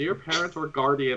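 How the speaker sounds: normal talking voice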